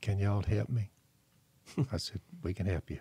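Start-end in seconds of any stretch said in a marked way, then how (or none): 0.0-0.9 mock-meek, timid, much quieter voice. Speaker retells a woman sitting down and asking them for help, imitating a meek voice. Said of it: "in a meek voice".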